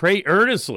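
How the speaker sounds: stress on earnestly.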